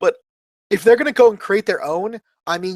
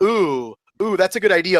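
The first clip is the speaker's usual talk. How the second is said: mock sarcastic, teasing voice. Retelling how Brian Flynn answers fan ideas: imitating Brian Flynn sarcastically teasing. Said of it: "kind of in a very sarcastic way".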